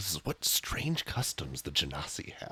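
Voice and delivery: whispered aside. Voicing Canute in a scene, whispering to himself. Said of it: "whisper to himself".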